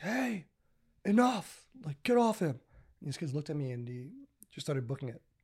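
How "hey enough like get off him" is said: very high, drawn-out, lung-busting full yell. Recalling kids stomping on a boy, the speaker re-enacts yelling at them; retelling own full-lung yell. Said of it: "I just yell at all my lungs".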